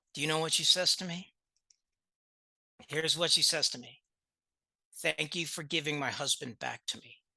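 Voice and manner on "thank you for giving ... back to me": soft, hushed half-whisper stage whisper. Retelling what a wife half-whispered to the speaker after her husband graduated: imitating a half-whisper. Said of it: "she whispers in my ear".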